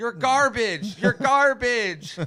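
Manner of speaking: put-on squeaky, very high, loud little kid voice. Describing kids trash-talking over headsets, imitating a kid talking super high. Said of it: "some kid that's like talking super high".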